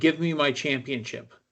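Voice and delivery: ordinary talk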